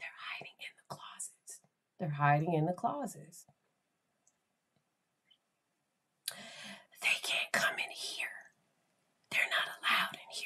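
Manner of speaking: put-on soft, breathy child's whisper. Retelling what a traumatized child said in her ear: imitating a child whispering. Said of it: "she was whispering in my ear like that".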